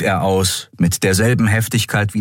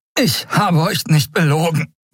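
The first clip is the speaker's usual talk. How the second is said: very high, breathless, panting, gasping words; 9 semitones higher than usual. Narrator reads Kai answering while Keru holds him in a grip; gasping. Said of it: "keuchte er".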